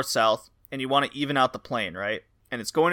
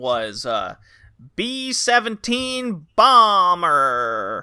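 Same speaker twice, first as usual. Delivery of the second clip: robotic synthesizer voice, higher and slower; 4 semitones higher, 5 dB louder than usual. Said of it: "that's how the Intella voice would say the title".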